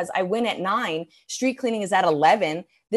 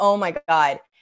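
mock crying, lower pitch; 2 semitones lower than usual. Retelling a moment during a bladder procedure, imitating own crying. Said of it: "crying, just being like".

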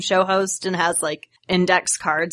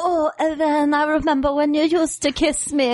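poor, put-on Spanish accent, pitched up; 8 semitones higher than usual. Retelling a scene where the girl in his closet speaks to him, bad Spanish accent. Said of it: "I'm not a good Spanish accent".

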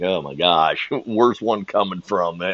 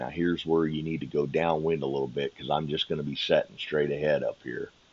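put-on whisper, lower and quieter; 3 semitones lower, 7 dB quieter than usual. Retelling directions given while sneaking out together: retelling a whisper. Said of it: "and I whispered".

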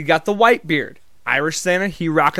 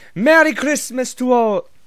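bad, terrible put-on Irish accent, pitched up; 7 semitones higher than usual. Speaker, as the irish santa, retries the line in a bad irish accent. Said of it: "let me use the accent".

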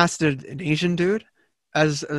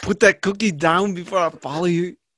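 uncertain put-on Austrian accent that drifts; 2 semitones higher than usual. Riffing on a pitched movie sequel starring him, in an uncertain Arnold Schwarzenegger accent. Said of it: "I don't even know what accent I'm doing anymore".

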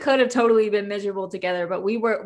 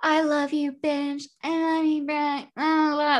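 put-on loud, high, drunken hollering; 6 semitones higher than usual. Retelling leaning out of a car window: imitating drunken screaming. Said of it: "I'm just fucking screaming in the middle of the fucking city".

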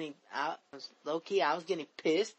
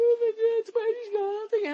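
mock crying, higher and louder; 8 dB louder than usual. Retelling hearing someone cry as everything started disappearing: imitating someone crying. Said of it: "I actually heard a crying".

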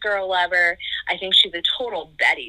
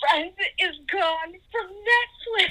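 put-on very high, drawn-out tearful sobbing; 12 semitones higher, 5 dB quieter than usual. Retelling a daughter bursting in with bad news: imitating someone crying. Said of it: "tears streaming down her face".

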